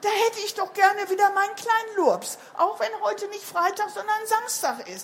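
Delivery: high, loud, anxious worried cry. Reading a mother creature calling out beside her sick child, worried cry. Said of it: "rief sie bekümmert".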